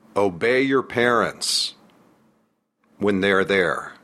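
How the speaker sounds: very slow, drawn-out, with pauses between words. On a book tour, recounting a performer's unique style, mimicking him talking really slowly. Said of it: "And he talked really slowly".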